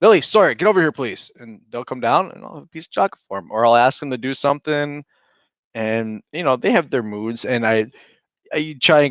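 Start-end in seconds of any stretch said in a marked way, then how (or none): 0.0-1.3 put-on firm, stern, no-nonsense tone. Retelling calling the kids to come over: imitating a stern call. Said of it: "I'll be stern".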